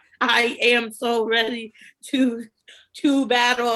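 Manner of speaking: very slow, flat, monotone robotic voice. Retelling a line read stiffly off a teleprompter: robotic voice imitating Fessy. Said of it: "Why is he talking like a robot?".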